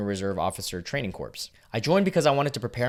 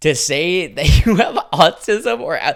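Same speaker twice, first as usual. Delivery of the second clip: very loud, high speech broken by laughter; 7 semitones higher, 11 dB louder than usual. Reacting to someone's stepdad telling recruiters to lie, laughing while talking. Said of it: "I'm laughing".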